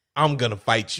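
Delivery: mock blunt, flat threatening tone. Retelling a character's line to another speaker: imitating a blunt threat. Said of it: "the way he says it, though".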